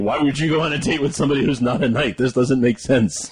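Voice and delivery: ordinary talk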